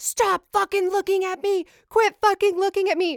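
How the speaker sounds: put-on all-out high screaming outburst. Speaker retells a man with a sword in la screaming at them, imitating the screaming. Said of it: "I hear him screaming like".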